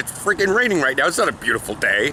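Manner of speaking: ordinary talk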